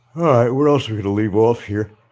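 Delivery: yawned-through, stretched-out words, high and loud. Tired after getting up early, asking what else to cover, talking through a yawn. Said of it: "Sorry about the yawning".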